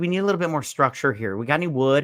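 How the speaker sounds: ordinary talk, nothing marked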